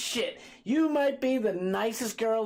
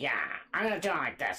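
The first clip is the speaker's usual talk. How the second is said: very deep, low, swooping made-up voice; 9 semitones lower, 5 dB quieter than usual. Guessing from his looks how a stranger talks: guessing how someone talks. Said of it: "He looks like he talks like this".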